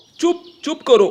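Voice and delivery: high, loud angry shout. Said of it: "ये पापा इतने गुस्से में क्यों है".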